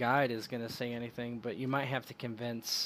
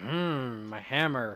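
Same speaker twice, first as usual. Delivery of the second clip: raised, grumbling, complaining voice; 5 dB louder than usual. Retelling a story, the speaker acts out a character's reply, imitating a grumble. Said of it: "he kind of grumbles and he's like".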